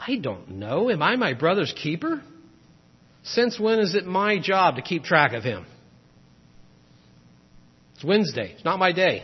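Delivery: put-on snide, sarcastic, dismissive tone. Speaker reading Cain's reply aloud as an example, Cain's mock-snide tone. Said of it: "Read this with a snide tone".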